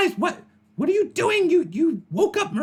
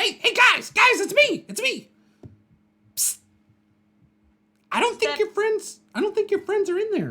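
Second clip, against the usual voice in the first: goblin creature voice, much higher pitch; 4 semitones higher than usual. Game master voices a goblin the players met earlier: little goblin voice. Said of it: "that little goblin shit".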